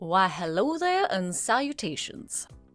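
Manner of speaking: cheap, put-on Old West gentleman voice. Speaker switching topics, cheap knockoff Doc Holliday voice. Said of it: "like some sort of cheap knockoff of a Doc Holliday".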